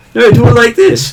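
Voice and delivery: very high, loud crow voice. Voicing the crow advising a player how best to hit things: voicing the crow. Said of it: "words of the crow giving you advice".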